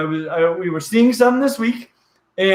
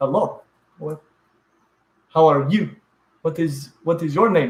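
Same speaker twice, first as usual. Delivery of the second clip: put-on Peruvian accent in English. Imitating Peruvians trying out English phrases, in a Peruvian accent. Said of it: "Peruvians doing English accents".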